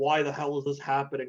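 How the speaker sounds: ordinary delivery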